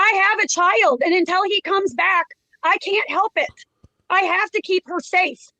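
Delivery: agitated, heated, worked-up voice. In a deposition, the witness explains she must deal with her child, shouting. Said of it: "You're shouting".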